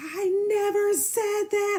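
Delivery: very drawn-out yell. Retelling a phone argument, what he said: imitating him yelling. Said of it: "he's yelling on the phone".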